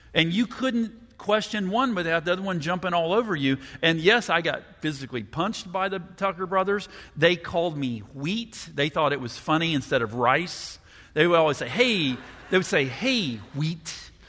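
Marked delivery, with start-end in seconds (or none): none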